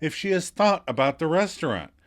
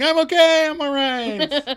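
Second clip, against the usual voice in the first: very high, slow, long drawn-out shout, acted; 13 semitones higher, 6 dB louder than usual. Retelling a scene where Monica rolls back: put-on shout as Monica.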